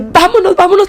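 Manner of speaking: quick, high, rushed, desperate and frightened.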